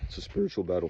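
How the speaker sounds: little crack in the voice partway through. Speaker addressing a listener about mental toughness, with a little voice crack. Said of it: "I got a little voice crack".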